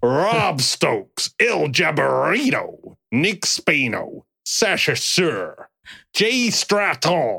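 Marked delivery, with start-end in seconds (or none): 6.1-7.4 spoken with a French accent. Reading out a list of names, the speaker says this one in a french accent. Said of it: "That's French".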